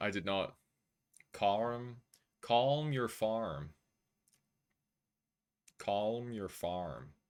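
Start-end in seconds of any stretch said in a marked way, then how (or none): 1.3-7.1 deliberately bad American accent, spoken very slowly. Speaker showing how they said a phrase, deliberately awful american accent. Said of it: "It's awful on purpose".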